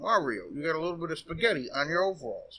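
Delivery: ordinary talk, nothing marked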